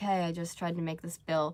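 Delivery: ordinary delivery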